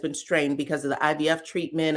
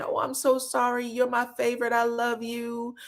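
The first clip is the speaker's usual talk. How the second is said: mock tearful drunken voice, higher and quieter; 6 semitones higher, 4 dB quieter than usual. Retelling an apology after acting a fool: imitating a drunk auntie crying. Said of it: "like the drunk auntie who acts a fool and then comes over and starts crying".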